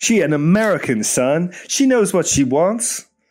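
put-on American accent. Showing the other speaker that they can be american, in a fake american accent. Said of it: "See, I can be American".

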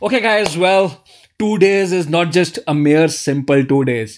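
salesy pitchman announcer delivery. Narrator retells Shankar addressing the group, in a loud voice. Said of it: "in his loud voice started".

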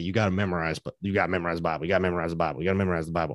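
put-on Southern accent, emphatic and repeated. Explaining how people read a scripture teaching, imitating a Southern voice. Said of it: "that voice is always Southern".

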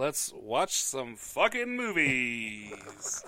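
full-on enthusiastic gusto, swooping, movies drawn out. Told to say the line again with gusto, delivering it with gusto. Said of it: "Say it again with gusto".

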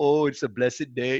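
very sweet teacher voice. Retelling another teacher's words: imitating Thich Nhat Hanh sweetly. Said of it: "being so sweet to me".

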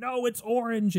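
put-on screaming grown man. Retelling a funny video to a friend, acting out what a grown man shouted during a game. Imitating a man screaming. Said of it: "the little boy screaming that".

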